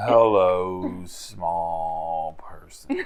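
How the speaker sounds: slow, soft delivery, lingering on "small". Voicing an assassin who catches a small person: talking slow. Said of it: "an assassin that talks slow".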